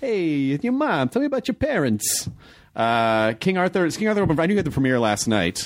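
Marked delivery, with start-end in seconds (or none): 0.0-2.3 pitched-up, tough-guy gangster accent. Joking that someone is going to the shrink, playing the shrink in a gangster accent. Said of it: "I still gotta have like a gangster accent".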